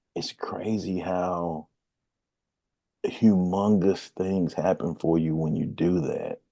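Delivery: hushed voice, still in shock.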